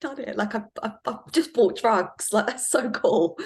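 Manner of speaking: high, giddy excitement.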